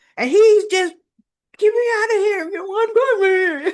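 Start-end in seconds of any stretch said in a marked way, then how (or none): 1.6-3.7 put-on muffled, gagged speech, higher and louder. Retelling a scene where a captive speaks through a ball gag: imitating muffled speech through gag. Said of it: "I can't understand you".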